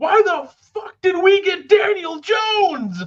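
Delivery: play-acted, very high, shrieking, drawn-out scream. Retelling a friend's reaction to a draft pick: imitating a friend screaming. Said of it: "Just screams it".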